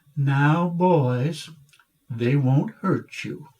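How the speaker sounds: put-on thick Alabama Southern accent, drawn-out "boys". Retelling what the speaker's mother said to the boys, in her southern accent. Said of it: "she said in her southern accent".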